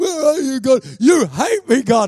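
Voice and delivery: high, swooping, tearful crying yell. Recounting the time they yelled at God, retelling crying and yelling. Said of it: "crying and yelling".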